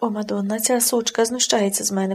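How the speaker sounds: ordinary delivery, nothing marked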